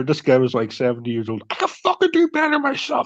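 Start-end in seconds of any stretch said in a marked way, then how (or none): 1.5-3.1 put-on very high, shrill bellowed yell. Retelling how a seventy-year-old man stood right in front of them, retelling an old man shouting.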